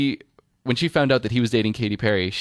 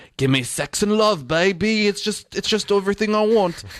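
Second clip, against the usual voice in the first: awful, lousy fake British accent, way up high; 10 semitones higher than usual. Retelling own costume party lines: worst Russell Brand impression. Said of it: "It's like the worst Russell Brand impression ever".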